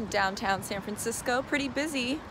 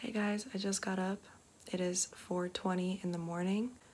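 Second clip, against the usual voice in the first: whispering, quieter and slower; 3 semitones lower, 6 dB quieter than usual. Early-morning video made while everybody in the house is asleep, whispering. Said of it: "I'm whispering because everybody's asleep".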